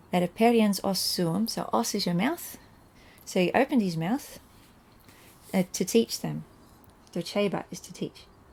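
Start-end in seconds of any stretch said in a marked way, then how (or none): none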